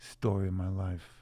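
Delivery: ordinary delivery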